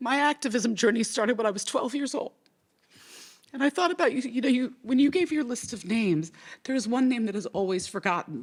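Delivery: sobbing while speaking. Emotional after thanking the previous speaker, starting to tell their activism story, crying. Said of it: "(speaker sobbing)".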